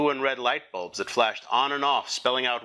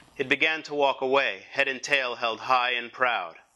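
ordinary delivery

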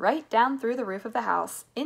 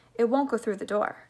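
usual speaking voice

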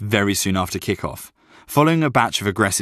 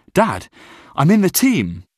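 very high, thrilled, excited, swooping voice; 9 semitones higher, 4 dB louder than usual. The narrator calls his dad after being picked for the school team, excited. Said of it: "I called my dad excitedly".

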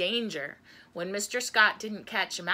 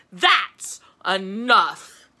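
very loud bellowed roar; 8 dB louder than usual. Gus suddenly turns on Mouse, roaring. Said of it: "pointed his finger at Mouse and roared".

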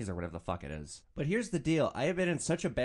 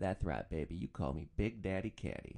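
low, tough pimp persona voice. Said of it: "So I created this, this persona".

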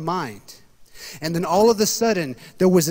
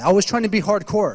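ordinary delivery

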